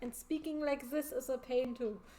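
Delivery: over-the-top, exaggerated, put-on German accent. Rerouting a doll while talking, in an exaggerated German accent. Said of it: "speak English with a, with a German accent again".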